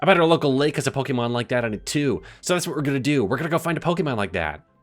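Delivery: annoying know-it-all sounding voice. Narrating a game, speaking for a character in the Polar Express kid voice. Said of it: "I'm kind of imagining that voice for him now".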